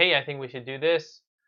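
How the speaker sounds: ordinary delivery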